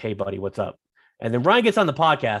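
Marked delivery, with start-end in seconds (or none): 0.0-0.8 plain, casual everyday talking voice, off mic. Showing how a co-host talks before joining the podcast: imitating Ryan's off-air voice. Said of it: "Ryan talks like this".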